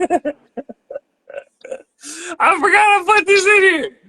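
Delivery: talking through giggles in a very high voice. Reading an intro and stopping over a line in it, laughing while talking. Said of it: "I'm laughing".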